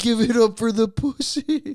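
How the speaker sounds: put-on high, loud, obnoxious drunken hollering. Retelling what an obnoxious guy kept yelling; imitating his obnoxious yelling. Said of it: "He was just like".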